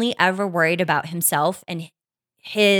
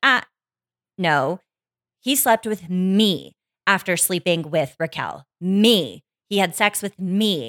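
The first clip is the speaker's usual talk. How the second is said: plain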